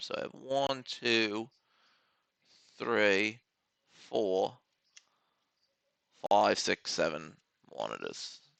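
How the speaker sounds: soft put-on British accent, played for laughs. On camera, counting the monitors on his desk: british accent. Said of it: "I did that with a British accent".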